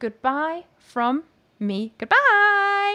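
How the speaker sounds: deliberate, very slow, drawn-out delivery. Signing off to the chat room, giving the other speaker time to collect herself; speaking really slowly. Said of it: "I'm doing this really slowly".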